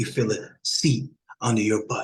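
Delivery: settled, locked-in delivery, deep, calm, toned-down voice. Calming things down for the audience, in a deeper voice. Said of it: "Y'all hear the voice getting a little bit deeper".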